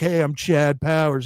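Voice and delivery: put-on Southern accent, put on. Retelling the undercover football skit, imitating Chad Powers' Southern accent. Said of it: "this Southern accent. He's like".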